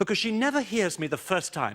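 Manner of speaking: plain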